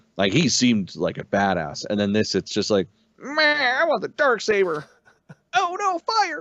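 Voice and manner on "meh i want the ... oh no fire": very high, swooping, whiny voice. Mocking a villain as a spoiled rich kid: mocking whiny Gideon voice. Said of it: "I love that voice".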